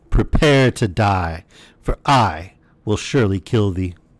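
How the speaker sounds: slow, dreadful, menacing genie voice. Narrator reading the genie's words to the fisherman, terrible voice. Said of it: "exclaimed in a terrible voice".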